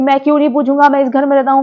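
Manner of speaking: quarrelsome, argumentative, combative tone. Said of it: "Karanvir इस टोन में बात करने लगा".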